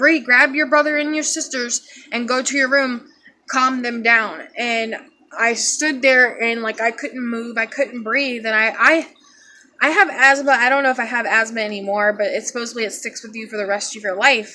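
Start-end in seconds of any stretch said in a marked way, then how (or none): none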